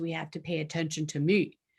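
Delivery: put-on deep, low voice. Demonstrating a tone that demands attention, in a deep voice. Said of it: "that was my deep voice".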